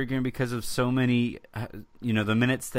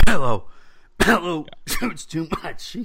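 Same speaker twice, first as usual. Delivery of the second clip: fake-coughing words under the breath; 5 semitones higher, 7 dB louder than usual. Imagining a player coughing words under his breath at a teammate: Kristaps Porzingis fake-coughing words under breath. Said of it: "coughing under his breath".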